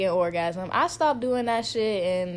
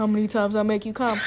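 ordinary delivery

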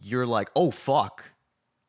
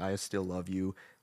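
whispered, much quieter; 2 semitones lower, 9 dB quieter than usual. Describing a film's farewell scene before the plane leaves, retelling a whisper. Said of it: "he's whispering like".

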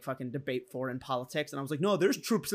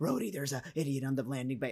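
pissed-off, soft, angry half-whisper; 5 dB quieter than usual. Describing a movie character's usual voice, imitating Nebula's angry half-whisper. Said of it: "she's always kinda whispering like this".

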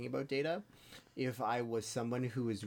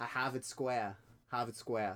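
put-on Boston accent with heavy Boston vowels. Showing off an accent on request: put-on boston accent. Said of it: "I can do a Boston accent".

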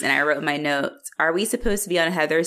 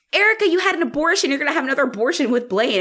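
put-on high-pitched screaming outburst; 9 semitones higher than usual. Retelling what a character might as well have screamed: imitating a scream. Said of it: "she might as well have just screamed".

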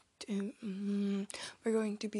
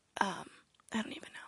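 usual speaking voice

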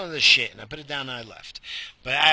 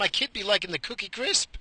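voice cracking, breaking up high; 6 semitones higher than usual. Talking to the audience about old cereals and their kid, voice cracking. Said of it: "Did you hear my freaking voice crack?".

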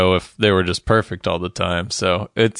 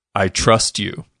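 put-on heated delivery. Retelling a scene from a show where two characters argue: imitating a heated line. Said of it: "very heated".

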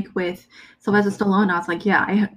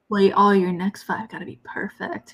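mock, put-on intimidating voice; 3 dB quieter than usual. Retelling a movie scene at a shooting gallery: imitating someone trying to intimidate. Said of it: "he was trying to be intimidating".

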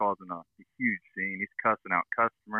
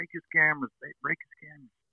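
put-on furious voice, pitched up, said twice; 6 semitones higher than usual. Retelling what a pepper-sprayed security guard said: imitating an angry guard. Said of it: "He's pissed".

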